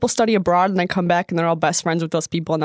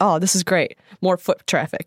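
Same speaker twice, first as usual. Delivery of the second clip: put-on excited tone of voice. Retelling a man's reaction to his hotel room: imitating someone excited. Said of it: "he gets all excited".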